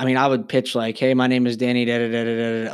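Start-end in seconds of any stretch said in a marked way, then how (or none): 1.0-2.7 lifeless, flat droning monotone with no rises or falls. Recalling his bad early pitches at people's doors, flat monotone. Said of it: "like monotoned, like Ferris Bueller's teacher monotoned".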